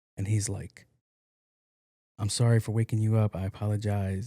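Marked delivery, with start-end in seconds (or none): 2.2-4.3 put-on apologetic voice, lower pitch. Acting out a scene where a husband apologizes to his wife: acting out an apologetic husband. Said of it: "I'll pretend to be him".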